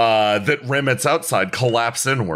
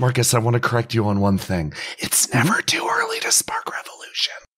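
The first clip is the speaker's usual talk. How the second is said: stage whisper, spoken close in. Voicing a character squatting over a player's ear: whispering character line.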